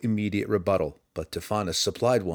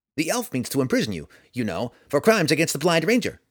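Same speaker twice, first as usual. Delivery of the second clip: squeaky, high sprite voice, sly and needling; 6 semitones higher, 3 dB louder than usual. Narrator reads a sprite snapping back at Roddy: squeaky Tifonus voice. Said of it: "The sprite ambled about as best he could, ... Roddy froze at the unexpected squeaky voice".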